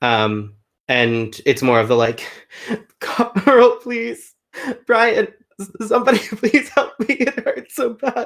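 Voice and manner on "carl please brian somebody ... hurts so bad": very high, racked, sobbing cry. Recounting a scene where Faye's body is racked with sobs, imitating Faye's sobbing plea. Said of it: "Faye's body getting like racked with sobs".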